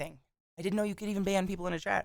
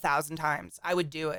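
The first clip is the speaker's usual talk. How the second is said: ordinary talk, nothing marked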